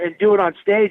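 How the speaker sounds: normal talking voice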